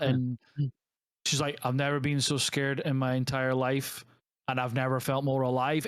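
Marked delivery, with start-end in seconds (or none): 1.6-5.9 deadpan, inflectionless, flat and dull monotone. Imitating how she delivered a dramatic line, flat monotone delivery. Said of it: "It's genuinely that monotone".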